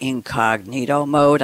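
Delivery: deep, dark-sounding voice. Asking viewers about browser privacy, "incognito mode" in dark voice. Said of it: "I like to say that in a dark voice".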